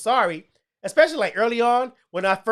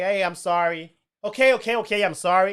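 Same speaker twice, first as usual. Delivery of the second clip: insincere, dismissive and drawn-out. Showing the kind of apology said just to get over it: mock dismissive apology. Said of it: "Like that kind of "I'm sorry."".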